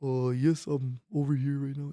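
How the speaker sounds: put-on voice with slight Spanish accent. Pretending to answer the phone as the guest being called: imitating Alex Reyes. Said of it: "that's Alex Reyes".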